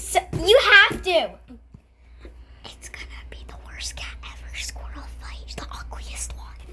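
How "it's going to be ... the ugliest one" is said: very quiet, breathy, hushed whisper. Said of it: "I'm gonna whisper cat into your ear".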